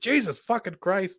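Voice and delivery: high-pitched, blurted, fully in put-on character voice. Showing how to impersonate Don: imitating Don. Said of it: "if you wanna impersonate Don".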